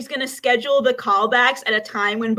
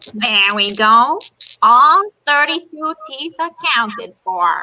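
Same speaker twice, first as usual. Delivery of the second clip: put-on raised, loud elderly New Jersey woman voice; 5 dB louder than usual. Answering a director's request for a voice: quiet old New Jersey woman voice. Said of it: "Give me your best old woman, New Jersey, kinda quiet, not too goofy".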